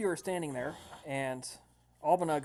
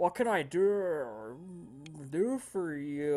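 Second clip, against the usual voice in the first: mock talking with mouth full, much slower. Retelling a man who walks in and takes a big bite: imitating talking with mouth full. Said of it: "talking with his mouth full".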